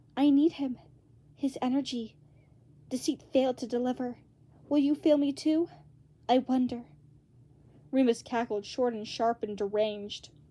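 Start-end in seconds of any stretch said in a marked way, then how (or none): 0.2-6.9 hissing, hissed whisper. Reading a story aloud, voicing a strange voice that wants Virgil back: hissing whisper. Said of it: "in a hissing sort of whisper".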